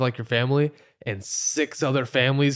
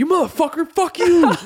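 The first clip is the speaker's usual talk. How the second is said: very high, shrill, loud, raging yell; 6 dB louder than usual. Describing their reaction when a driver turns in front of them, acting out road-rage yelling. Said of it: "I road rage like a motherfucker".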